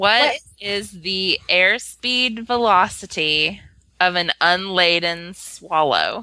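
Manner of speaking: deep, slow, deliberate, careful word-by-word phrasing. Repeating a question to a device after being told to ask it, said slower. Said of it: "say it slower".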